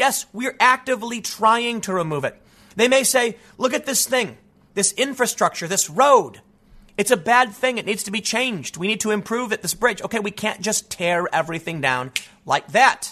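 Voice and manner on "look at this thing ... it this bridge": normal talking voice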